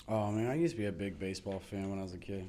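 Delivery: downcast, sad, very low and quiet. Talking to the people in the room, sounding sad. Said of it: "you sound".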